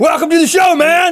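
high, loud yelling.

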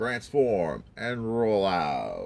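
soft heroic robot-leader voice, kept quiet. Showing a Transformers Prime figure, doing an Optimus Prime impression. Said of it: "It's my Optimus Prime impression".

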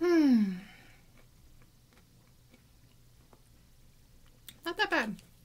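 talking with mouth full of food. Tasting snacks one by one and rating them, talking with mouth full. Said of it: "Still talking my mouth full".

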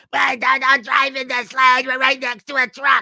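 mock very high, shrill, loud screaming scold. Recalling a friend's mother in the car with her son; retelling a scream. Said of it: "she'd be screaming at him".

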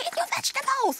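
very high-pitched, upset scolding tone. Retelling scolding a toddler who wouldn't eat vegetables; mock-upset scolding. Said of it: "I got really quite upset at one time".

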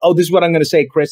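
normal talking voice

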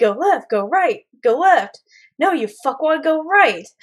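GPS-style navigation or phone assistant voice. Retelling a video of a woman giving driving directions in a car, Siri voice. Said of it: "she's doing it exactly in a Siri voice".

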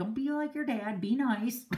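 plain

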